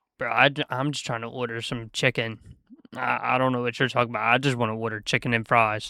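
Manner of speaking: plain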